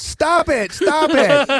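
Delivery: very high, very slow, drawn-out pleading yell. Retelling audience members yelling at a performance: imitating audience yelling. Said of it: "I had people yelling at me".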